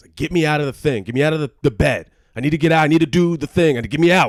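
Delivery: furious, very loud, high, angry screaming. Speaker acts out a man in bed screaming at them, retelling a scream. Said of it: "And he's like screaming at me".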